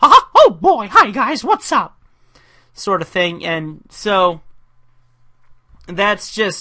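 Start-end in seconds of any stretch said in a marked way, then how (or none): 0.0-2.0 squeaky, very high, loud and swooping. Showing the Mickey-inspired side of Gizmo's voice: Mickey Mouse feeling. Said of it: "pulls from the Mickey feeling".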